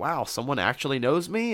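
mock, light, tossed-off, playful joking tone. Retelling how a man joked after being recognized, imitating a joking tone. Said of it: "in a joking manner".

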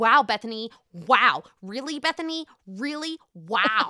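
New York housewife voice, reality-TV style. Quoting a reality show scene, doing an impression of Ramona. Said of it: "That was such a good impression of her".

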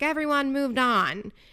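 fed-up, exasperated yell. Recapping a group argument, acting out a man who wants everyone to move on, retelling a yell. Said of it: "He's yelling".

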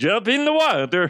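bad put-on German accent. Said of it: "That's a shitty fucking accent".

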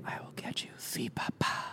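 very quiet, breathy, hushed ghostly whisper. Retelling a recorded spirit voice from a cell block: imitating a ghost's whisper. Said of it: "it literally whispers".

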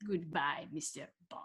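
very quiet, put-on Russian villain accent. Asked to say a farewell line in that same voice: attempted Russian villain voice. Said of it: "Can you use that same voice and say goodbye".

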